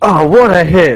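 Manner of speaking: thundering, high, loud booming voice. Voicing a character who calls out from across the battlefield: thundering, booming voice. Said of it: "a thundering, booming voice".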